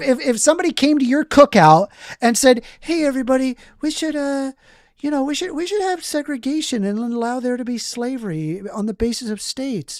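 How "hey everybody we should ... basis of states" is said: sweet, polite, as-nice-as-can-be tone. Acting out a guest at a cookout: imitating someone saying it nicely. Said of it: "If I said that as nice as possible".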